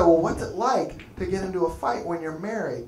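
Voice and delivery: normal talking voice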